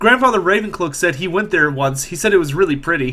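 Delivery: normal talking voice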